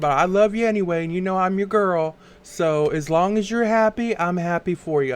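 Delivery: normal talking voice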